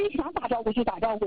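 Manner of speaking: ordinary talk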